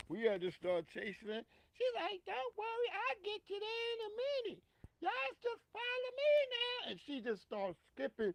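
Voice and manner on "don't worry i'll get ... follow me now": put-on tiny, very high-pitched little girl's voice. Retelling how a possessed daughter spoke: imitating a little slave voice. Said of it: "started talking in this little, like, slave voice".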